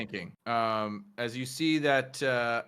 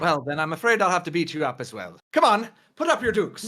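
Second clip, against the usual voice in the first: put-on leprechaun voice, high and loud; 5 semitones higher, 5 dB louder than usual. Acting out a scene about a squirrel, threatening a fight, in a leprechaun voice. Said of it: "you see it's a leprechaun holding Tilly".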